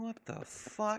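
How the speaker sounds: very high, muttered under the breath. Voicing Dave after the bite attempt, muttering under his breath. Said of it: "you could hear Dave say under his breath".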